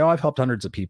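plain

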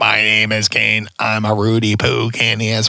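level, flat voice through a voice box. Speaker retells urging the Rock to do the fake voice box, fake Kane voice box. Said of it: "do the fake voice box".

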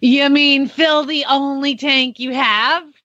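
mock patronizing, very condescending talking-down voice. Retelling what a fuel attendant said about the truck's tank, imitating a condescending tone. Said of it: "says in a super condescending voice".

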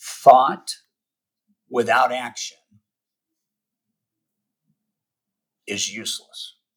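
word-by-word, very slow. Speaker pausing to deliver a saying to people, said really slowly. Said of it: "I got to say this really slowly".

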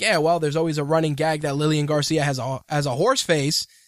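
usual speaking voice

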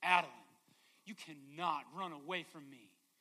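mock stern, firm, no-nonsense, authoritative voice. Retelling how the speaker's wife told adeline off in a fabric store, mimicking an authoritative voice. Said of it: "in her best authoritative voice says".

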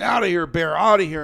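play-acted loud yelling. Retelling a standoff with a mother bear, retelling yelling at the bear. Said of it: "So now I'm yelling at the bear".

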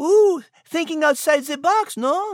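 very high-pitched, put-on purring French accent. Voicing the French cat character thanking the announcer: French accent. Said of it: "I am a French feminine feline".

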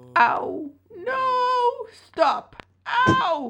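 very high drawn-out moans. Something trapped in a bag being beaten cries out; beaten moan. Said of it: "came a beaten moan from deep within the bag".

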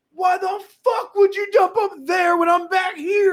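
shouting, shrill and very high-pitched. Retelling yelling at a man who dumped up front, retelling own yelling. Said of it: "and I was yelling".

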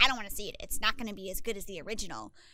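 laid-on storybook wicked witch voice. Imitating a mother's complaint about remakes, imitating mom in Wicked Witch voice. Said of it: "Her mom is the Wicked Witch of the West".

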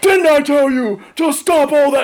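very high-pitched military command voice. Retelling coming into the room to stop them: Marine Corps voice. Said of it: "I'm using my Marine Corps voice".

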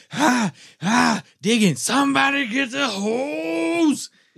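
high, slow, breathless yell.

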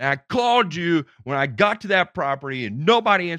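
loud screaming. Retelling an argument with an old man, retelling screaming at a man. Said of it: "I'm screaming at him".

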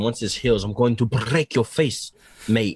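put-on Arabic-sounding accent. Retelling a fighter's threat to break an opponent's face: Darren Till impression. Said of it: "That sounded also very Arabic".

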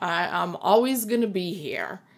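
ordinary talk, nothing marked

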